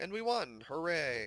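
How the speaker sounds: slow cheerful tone that sounds sarcastic. Celebrating winning a mission in the game: sarcastic-sounding cheer. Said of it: "That sounded really sarcastic".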